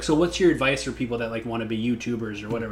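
ordinary delivery

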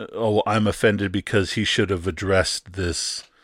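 normal talking voice

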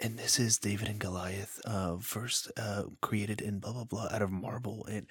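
put-on very quiet, hushed narration voice. A student mimics the two presenters of a museum video, imitating a very quiet voice. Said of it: "and this is in a very quiet voice".

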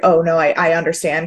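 plain

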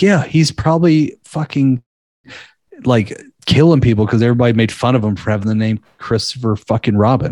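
plain

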